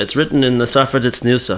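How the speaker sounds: ordinary talk, nothing marked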